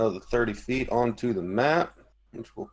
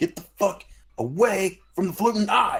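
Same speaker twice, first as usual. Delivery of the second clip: high-pitched, loud yelling; 8 semitones higher, 3 dB louder than usual. In a tabletop game, a player's character yells at the guys during a fight: yelling. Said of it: "I'm going to start yelling at the guys".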